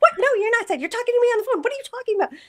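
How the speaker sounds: very high, rushed, rattled-off motor-mouth chatter. Retelling a phone call, imitating mom talking fast. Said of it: "when she gets to talking fast".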